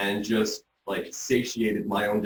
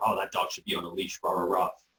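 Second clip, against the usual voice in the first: mock whispering voice. Retelling what someone walking by in the park said: imitating someone whispering. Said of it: "someone walking by whispering".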